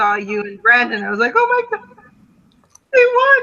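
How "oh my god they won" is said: put-on, very high, loud, shrieking, disbelieving excited scream. Telling the listener how they reacted on seeing them win, retelling their screaming. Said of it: "I started screaming again and freaking out".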